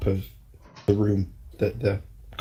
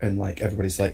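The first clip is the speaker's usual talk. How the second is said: usual speaking voice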